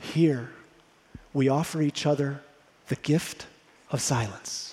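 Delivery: soft, hushed near half-whisper. Retelling what the man showing him the facility said, almost in a half-whisper. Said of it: "almost in a whisper".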